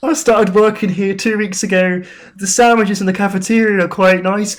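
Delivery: cartoon frog voice, belted out loudly. Playing an intern brought in to explain the game, in a Kermit the Frog voice. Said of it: "Why does he sound like Kermit the Frog?".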